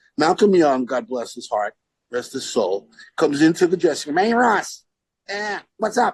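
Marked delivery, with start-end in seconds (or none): 4.2-6.1 breezy voice with pitch lifted up. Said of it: "And he talked like that".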